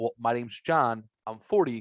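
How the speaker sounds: ordinary talk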